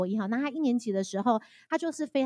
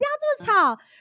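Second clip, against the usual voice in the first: put-on very high, shrill yell in a child's voice; 13 semitones higher, 8 dB louder than usual. Retelling how the children yelled at the speaker to be quiet, retelling children's yell. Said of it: "甚至会大叫说".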